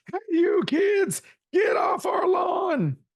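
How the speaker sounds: put-on old man's voice, pitched very high. Recalling the show's old sign-off bit before saying goodbye: old man voice. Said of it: "talk in an old man's voice".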